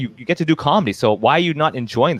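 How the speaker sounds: ordinary talk, nothing marked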